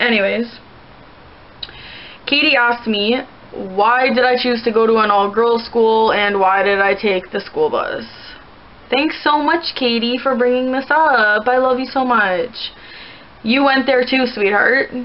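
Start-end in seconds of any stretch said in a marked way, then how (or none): none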